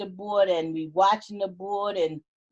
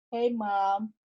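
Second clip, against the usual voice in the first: gentle, soft, angelic voice. Recalling a hospital moment, the speaker repeats a greeting to mom in an angel-like voice. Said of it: "it was just like an angel voice, like that".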